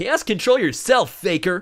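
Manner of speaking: shrill, very high, very loud taunting shout. Answering a chat request to do the Sonic voice: Sonic voice. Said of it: "can you do the Sonic voice?".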